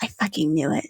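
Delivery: low, muttered aside. Voicing a character reacting to a reveal: muttering under breath. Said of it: "you hear Solus under her breath going".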